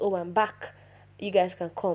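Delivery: ordinary delivery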